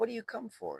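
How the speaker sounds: tiny, high voice that shivers and shakes. Reading a story aloud, the old woman questions the dancing man: small, shivering voice. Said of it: "in a small voice that shivered and shook".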